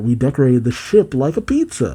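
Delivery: ordinary delivery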